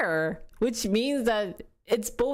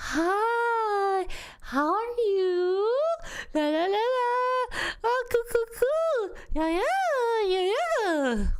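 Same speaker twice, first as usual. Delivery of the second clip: put-on baby-talk voice, very high pitch, very slow; 12 semitones higher than usual. Showing how they talk to the baby: high-pitched baby talk voice. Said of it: "it's always been high tone".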